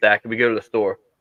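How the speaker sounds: normal talking voice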